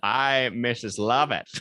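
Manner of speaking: full-voiced theatrical impression. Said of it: "Doing it in the full voice made it even better. Was that [name]?".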